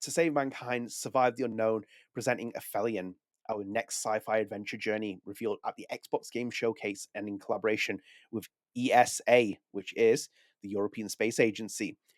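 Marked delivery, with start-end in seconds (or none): none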